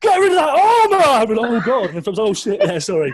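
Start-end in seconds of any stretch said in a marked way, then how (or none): 0.0-1.0 very high, loud, piercing scream. Retelling a geography-class memory about cardboard armor, imitating a loud scream. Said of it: "she screams it again, like really loud".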